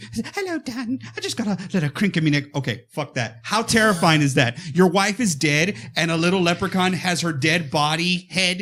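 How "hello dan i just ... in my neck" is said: put-on woman's voice, pitched up high. Retelling a movie scene where Leprechaun mimics a dead wife: Leprechaun mimicking the wife's voice. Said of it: "he's just moving it and mimicking her voice".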